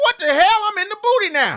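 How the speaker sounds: shocked, squealing.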